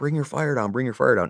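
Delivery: held-back, acted-out, called-out voice. Retelling a firefight, re-enacting yelling at the gunner to aim lower: retelling own yell. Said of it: "And I'm yelling".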